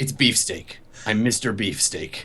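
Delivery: soft, angry, sneering voice. Voicing Mr. Beefsteak as he tells the player his name, angry sneer. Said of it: "He looks over at you angrily, like a sneer on his face".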